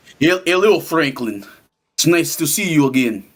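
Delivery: put-on speaking with a Russian accent. A roleplay character speaks to Franklin in a Russian accent. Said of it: "[name] having a Russian accent is crazy".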